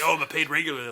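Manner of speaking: ordinary delivery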